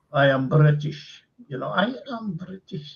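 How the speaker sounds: put-on German-accented delivery. Recalling a big director with a little fella beside him, doing German accent as Orson Welles. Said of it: "he's got this German accent".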